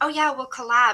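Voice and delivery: loud, plastic, insincere, fake-friendly agreeable voice. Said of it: "fake version of".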